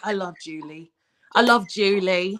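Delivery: put-on cute English accent. Quoting what Melanie always says in their meetings, in her cute English accent. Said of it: "in her cute little like English accent".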